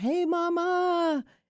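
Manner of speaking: acted, very high-pitched scream with Mama drawn out. Retelling calling out to a bald eagle while swimming with a friend: retelling a scream. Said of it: "and I screamed".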